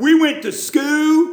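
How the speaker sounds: Wise County, Virginia accent. Showing how people from his home county pronounce school, Wise County, Virginia accent. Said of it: "That's how we pronounce school. That's Wise County, Virginia talk".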